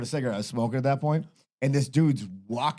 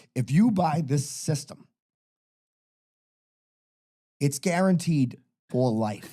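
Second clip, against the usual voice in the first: hard, separate stress on every word. Retelling the guy explaining the system to you, stressing every word. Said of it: "emphasis on every word".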